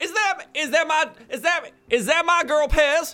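put-on blustery rooster voice. Voicing a father answering a knock at the door: Foghorn Leghorn voice. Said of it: "It's your dead foghorn leghorn".

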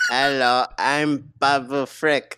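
put-on drunk-baby character voice. Gushing over a favorite character's lines, a fan quotes him in a Babu Frick voice. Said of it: "It's like a drunk baby".

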